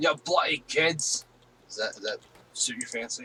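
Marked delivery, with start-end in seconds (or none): 0.0-1.2 bad, fumbling Scottish accent, pitched up. Told he sounds like Willie, the speaker keeps going in a bad Scottish accent. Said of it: "It's my Scottish".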